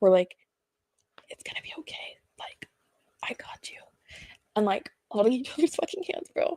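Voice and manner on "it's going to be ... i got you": hushed, barely audible whisper, held close. Retelling holding hands with a sister in the back seat: retelling a whisper. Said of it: "we're whispering this to each other".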